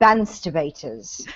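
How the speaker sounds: refined, polished, sophisticated British accent. Showing how the word would sound: sophisticated british accent. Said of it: "I practice this accent".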